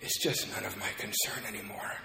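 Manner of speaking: soft, feeble, weak, broken, defeated voice. Recalling the father's words over a speakerphone, imitating his weak, destroyed voice. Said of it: "my father's weak and destroyed voice just say".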